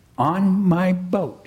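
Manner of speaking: proud, pleased voice. Pooh answers Christopher Robin's question about how he got there, proudly. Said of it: "said Pooh proudly".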